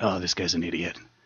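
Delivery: very quiet, hushed, deep gravelly under-the-breath mutter. Recalling a boss muttering under her voice, imitating her deep, gravelly voice. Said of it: "she has a really deep, gravelly voice like that".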